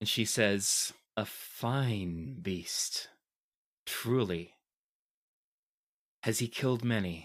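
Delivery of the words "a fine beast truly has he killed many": emotion-laden, edging manic, very slow delivery. Voicing a character admiring a beast: emotional, slightly manic voice. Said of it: "there is more emotion in her voice right now than you've ever heard before".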